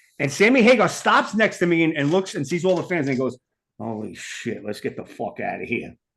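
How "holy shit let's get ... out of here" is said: hushed, very quiet, muttered aside, almost to oneself. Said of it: "Just like that".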